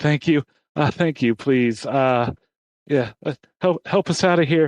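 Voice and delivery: sigh of relief, then relieved, pleading delivery. Voicing a crowd that sighs with relief and asks for help: relieved crowd pleading for help. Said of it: "breathe a sigh of relief and say".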